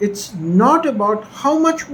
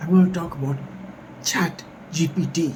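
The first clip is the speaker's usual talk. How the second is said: hushed whisper, quieter and lower; 5 semitones lower, 6 dB quieter than usual. Speaking to the audience, whispering. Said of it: "I'm whispering now".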